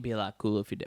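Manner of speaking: put-on drawling movie-star voice. Trying out an impression and asking if it is good: Matthew McConaughey impression. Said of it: "is that good McConaughey?".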